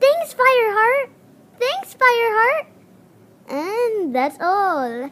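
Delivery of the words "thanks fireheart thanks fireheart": cute kitten voice, pitched very high. Auditioning Gorsekit's two lines, in an adorable Gorsekit kit voice. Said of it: "an adorable sounding boy kit".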